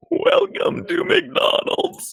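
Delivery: very high, creaky croak spoken on the in-breath. Friends discuss a funny voice trick and one demonstrates it, speaking while inhaling. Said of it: "just inhale while speaking".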